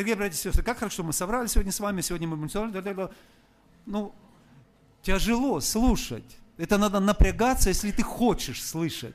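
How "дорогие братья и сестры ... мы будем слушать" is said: rapid-fire, run-together, rattled-off patter. Showing what overly fast speech to listeners sounds like: rattled off very quickly. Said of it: "бывает речь очень быстрая. Например, я буду говорить".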